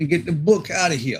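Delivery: unintended Brooklyn accent slipping in. Putting the stickers back in the book, slipping into a Brooklyn accent. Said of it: "I'm getting a Brooklyn accent".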